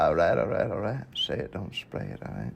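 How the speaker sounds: laid-back Texan drawl. Quoting a movie line to friends: Matthew McConaughey voice. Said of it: "In Matthew McConaughey's voice".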